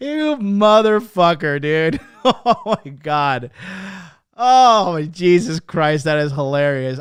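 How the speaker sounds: laughing through the words. Reacting to a funny chat message, laughing hard while talking. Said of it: "I'm laughing so fucking hard".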